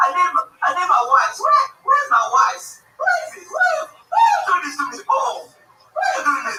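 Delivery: put-on Haitian accent. Retelling a man in a restaurant searching for his wife: imitating a Haitian man. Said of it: "it's like the Haitians".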